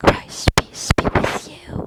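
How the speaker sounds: very loud voice, right up on the mic. Acting out a man who grabs your shoulder and leans into your ear, imitating a voice right in the ear. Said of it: "I'm gonna get real close to the mic here".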